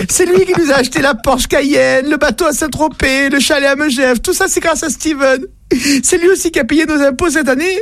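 breathless, high-pitched speech.

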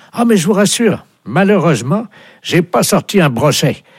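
very high, squeaky fisherman voice. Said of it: "il y a quelqu'un qui veut vous parler".

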